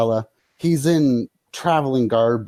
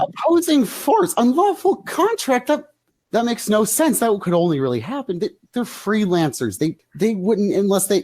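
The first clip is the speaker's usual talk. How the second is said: very high, furious, angry yelling; 9 semitones higher than usual. Two characters yell at a half-elf; angry yelling. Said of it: "They are angrily yelling at this half-elf".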